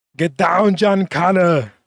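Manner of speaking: slow and loud, pitched high. Prompted to do it, the speaker gives an Arnold Schwarzenegger impression. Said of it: "that one is better than your Tony Montana impression".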